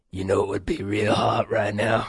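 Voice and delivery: unsettling, creepy put-on voice. Imitating the producer fantasizing behind the glass: imitating the producer in a creepy voice. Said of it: "creepy talking like, in that voice".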